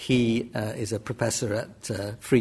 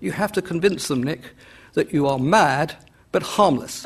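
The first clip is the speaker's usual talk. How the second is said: put-on very posh, upper-class British accent, raised; 6 semitones higher, 6 dB louder than usual. Speaker recalls early advice from Clive Bell, quoting him in Clive Bell's very posh British accent. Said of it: "in his very posh British accent".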